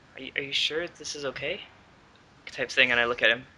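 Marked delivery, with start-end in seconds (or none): 0.2-1.6 very soft, quiet, lowered, hushed voice. Role-playing on a deck with people around, speaking to him in a lowered voice. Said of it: "I sort of lower my voice and I say like".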